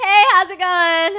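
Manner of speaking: overly bright, fake friendly tone, very high and loud. Showing how to greet people to avoid them: fake-smile greeting a bit too loud. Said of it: "talk, like, a little too many decibels too high".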